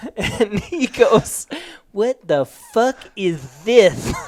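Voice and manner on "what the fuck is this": loud, heavy put-on lisp in tough-guy voice. Describing a man's reaction, imitating a man's higher-pitched lisp. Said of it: "the lisp was like more of a uh".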